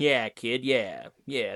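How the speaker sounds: low film noir detective voice. Describing a character called Nick, quoting him in a film noir detective voice. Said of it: "he talks like very film noir detective".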